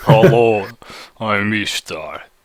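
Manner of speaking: put-on deep Russian accent. Players trying out a voice for the character, deep Russian Ishtar voice. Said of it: "it just gets deeper for a female".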